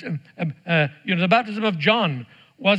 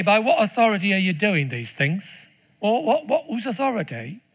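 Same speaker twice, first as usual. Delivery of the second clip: put-on English accent. A dad recalls reading the Bible aloud, voicing the scribes and Pharisees: English accent. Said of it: "I would always do it with an English accent".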